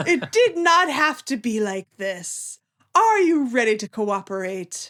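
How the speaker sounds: condescending, patronizing, falsely sorry talking-down tone. Recapping a scene where Prime speaks through a clone: patronizing Prime voice. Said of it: "quite patronizingly".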